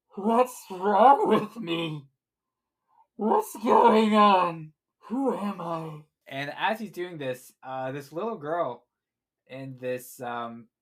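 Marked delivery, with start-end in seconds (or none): 0.2-6.0 very loud, high, distorted monster voice. Telling a story, the speaker voices a character seeing his reflection: distorted voice. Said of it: "in his di- his distorted voice".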